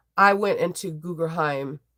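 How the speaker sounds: ordinary delivery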